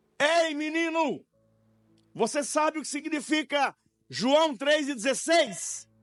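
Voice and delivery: very high, scary, frightening shout. A narrator reads a woman rising from her rocking chair to call to a boy: scary shouting voice. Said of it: "uma voz assustadora, ... ela gritou".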